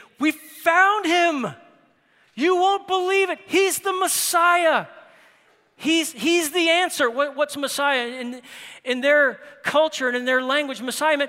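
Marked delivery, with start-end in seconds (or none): 0.2-7.1 mock-excited delivery, much higher pitch, slower pace. Speaker acting out the words of a man announcing what he found: acting out excited announcement. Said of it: "It is not just this monotone".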